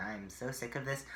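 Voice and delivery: plain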